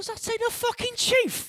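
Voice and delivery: put-on very high, slow, squeaky, girly squeal.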